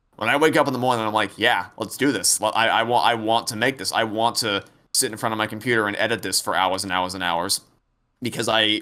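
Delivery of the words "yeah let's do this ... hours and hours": ordinary talk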